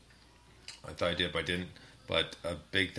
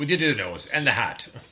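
high, loud bad English accent. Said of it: "switching my horrible English accent".

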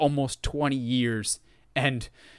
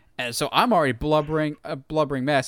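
ordinary talk, nothing marked

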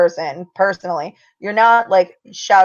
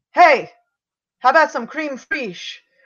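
blurted-out, high, sudden yell; 7 semitones higher than usual. Retelling yelling a quote at someone in a costume: retelling own yell. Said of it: "I just yelled".

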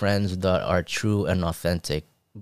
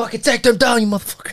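put-on very high-pitched sports coach yelling; 4 dB louder than usual. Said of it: "instead of just yelling at them like".

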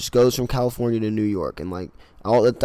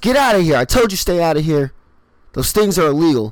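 acted-out high, loud yelling; 7 semitones higher, 5 dB louder than usual. Retelling a pet store manager chasing a customer out: imitating a yell. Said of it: "the manager yells".

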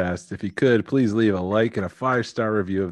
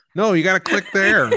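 mock old-person voice, higher; 10 semitones higher, 3 dB louder than usual. Joking that the two of them sound really old: imitating old people. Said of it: "We sound like".

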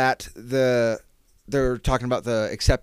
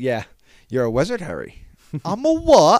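put-on British accent, much higher pitch; 4 semitones higher, 6 dB louder than usual. Retelling the scene where Hagrid tells Harry, the speaker quotes it in a British accent. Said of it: "My British accent".

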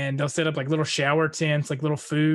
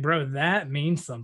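ordinary talk

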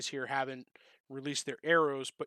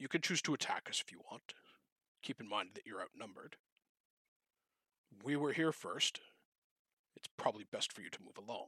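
very soft, deep, hushed character voice; 5 semitones lower, 10 dB quieter than usual. Voicing the magic user speaking to the players, in a deep voice. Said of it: "kind of like a deep voice".

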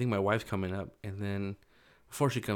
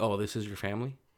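sassy, pointed delivery dripping with attitude. Retelling what the girl at the counter said: imitating a sassy attitude. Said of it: "with a sassy attitude".

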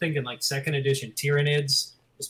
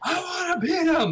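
put-on very high-pitched, almost childish scream. Retelling a Pumping Iron scene: imitating Lou Ferrigno screaming. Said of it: "he just screams".

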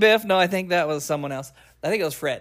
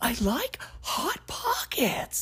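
slow, breathy half-whisper, breathed out; 9 semitones higher, 9 dB quieter than usual. Showing friends a Jim Gaffigan voice. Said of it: "It's Jim Gaffigan".

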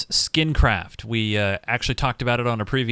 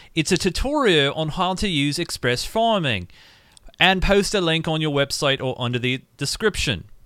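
put-on English-accented voice; 4 semitones higher than usual. A host reads a message aloud on the air, English accent. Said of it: "I did read it in an English accent".

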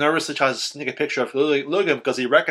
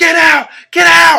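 very high, very loud, shrill, drawn-out scream; 14 dB louder than usual. Retelling how a bleeding man suddenly charged another man, retelling a scream. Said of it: "Screams at Chris".

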